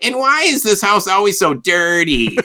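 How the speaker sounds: very high, whiny, complaining, sing-song voice. Describing a scene with an abusive father: whiny Andy Richter impression. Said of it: "in a very whiny voice".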